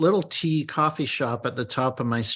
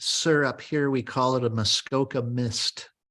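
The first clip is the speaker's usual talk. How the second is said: acted stern, firm, no-nonsense voice. Retelling what a lady said after a london fog was ordered: imitating a stern lady. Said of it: "the lady sternly told me".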